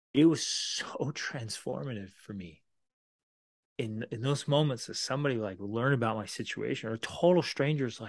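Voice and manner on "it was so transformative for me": slow, choked-up, emotional delivery. Recalling a stranger's kindness in hard times, getting emotional. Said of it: "I'm getting emotional right now".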